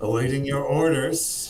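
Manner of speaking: growled through gritted teeth. Grumbling subordinates answering the player's orders in a role-play game, growled through gritted teeth. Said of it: "they growl through gritted teeth".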